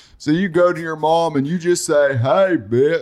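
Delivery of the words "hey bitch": fake slow drunk voice, much higher. Showing what to say to your mom, the speaker says it slow and drunk. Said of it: "That's a little slow and drunk".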